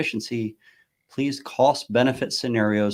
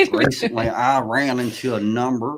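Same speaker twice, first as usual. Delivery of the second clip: attempted Southern accent. Urged by the others, the speaker tries a sentence in a real Southern accent. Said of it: "with a real Southern accent".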